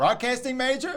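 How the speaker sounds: high, puzzled, quizzical tone.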